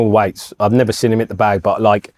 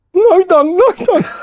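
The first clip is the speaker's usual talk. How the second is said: mock tearful, crying pleading voice, higher; 4 dB louder than usual. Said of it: "literally pleading for his life, crying".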